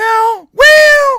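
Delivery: squeaky, very high, swooping, stretched-out voice. Quoting a Hollywood film reviewer's words, Grace Randolph impression. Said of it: "Grace and Mickey Mouse sound so similar to each other".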